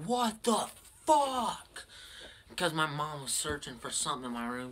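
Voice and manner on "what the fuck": high, raised screaming outburst. Recounting coming home after working out too much, the speaker is retelling a scream. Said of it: "I came home just fucking screaming".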